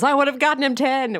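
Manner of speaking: put-on, high-pitched shouting. Retelling a scene where he answers a question: imitating someone yelling. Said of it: "And he yells".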